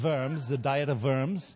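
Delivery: German-style pronunciation. Quoting Luther at the Diet of Worms, saying the name: German pronunciation. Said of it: "I have to say it like a German".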